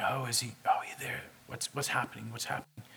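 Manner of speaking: muttered under breath. Retelling how the people at the feast talked about him: imitating muttering under breath. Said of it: "kind of speaking under their breath".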